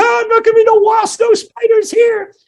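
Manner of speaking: crazed, frenzied, raving yell, very high pitch. Retelling a story, voicing a man imitating a lunatic: frenzied lunatic yelling. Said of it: "He started yelling like that too".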